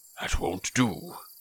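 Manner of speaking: severe, stern, whispered and hushed. Reading a story, one character rejects another's account: stern. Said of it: "said Gandalf sternly".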